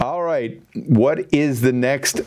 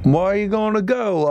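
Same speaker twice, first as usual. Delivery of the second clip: high, failed attempt at an Australian accent. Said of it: "I can't do an Australian accent".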